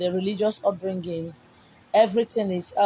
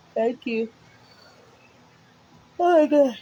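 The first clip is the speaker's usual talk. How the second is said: high-pitched words said through a yawn; 4 semitones higher than usual. Tired speaker, about to give listeners a message, yawning. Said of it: "I'm yawning".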